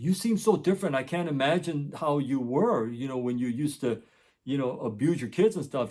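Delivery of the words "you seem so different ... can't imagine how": ordinary delivery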